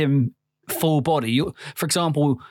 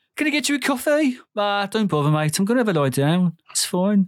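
Birmingham accent, pitched up; 6 semitones higher than usual. Joking that the character is from Birmingham now: Donald Trump with Birmingham accent. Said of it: "I'm Donald Trump".

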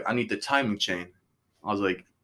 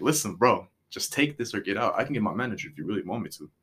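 put-on fed-up, impatient tone. Retelling answering a rude customer: imitating own fed-up tone. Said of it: "eventually it gets to the point".

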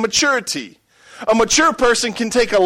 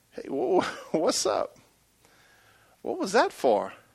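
very quiet, soft, gentle voice; 10 dB quieter than usual. Showing how to ask a spouse a question: gentle voice. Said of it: "ask one simple question with a gentle voice".

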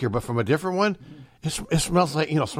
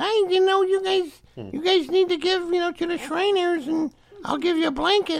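put-on thin, squeaky, very high young voice. Retelling a charity commercial's young spokesman from his early ads: imitating a squeaky young voice. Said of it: "he had a squeaky voice".

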